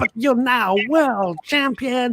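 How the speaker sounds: very high, excitable commentator voice, all excitement. The commentator presses Nigel Mansell in an interview, in an excitable Murray Walker impression. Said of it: "the most excitable commentator".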